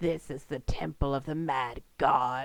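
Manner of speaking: deep, low growling voice. Narrating a scene, voicing a cloaked figure lurking in a doorway, growling. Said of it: "he growls".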